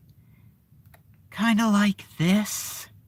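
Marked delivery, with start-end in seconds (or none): 1.3-2.8 higher, monotone delivery with no emotion. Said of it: "kinda monotone-ish".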